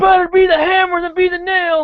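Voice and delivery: acted, shrill, very high, loud yell. Retelling a moment from the end of the immunity challenge: imitating Terry yelling.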